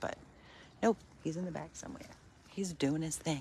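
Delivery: hushed whisper. Speaker whispers so he won't run up thinking he's getting fed; whispering. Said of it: "I'm just whispering".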